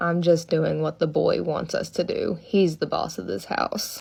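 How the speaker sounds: low growling voice, kept down low. Retelling a ghost story, quoting a daughter's words as a low growl. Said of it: "she said in like a low growl voice".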